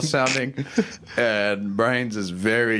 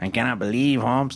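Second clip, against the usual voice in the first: put-on, attempted Spanish accent.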